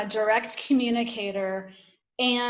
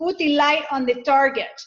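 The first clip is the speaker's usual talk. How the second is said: put-on Spanish-accented English; 3 semitones higher, 4 dB louder than usual. Telling a story, the speaker quotes a man who invited people in, using a Spanish accent. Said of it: "he had like this Spanish accent".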